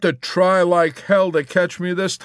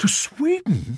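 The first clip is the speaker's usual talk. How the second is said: high, stunned, disbelieving, astonished tone; 8 semitones higher, 4 dB quieter than usual. Major Danby hears someone plans to run away, exclaiming in astonishment. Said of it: "Major Danby exclaimed in astonishment".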